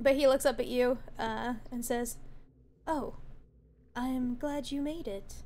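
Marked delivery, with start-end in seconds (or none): 2.9-5.3 slow, boyish put-on young boy voice. Voicing a twelve-year-old boy greeting the players: young boy voice. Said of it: "I tried to make him sound like a young boy".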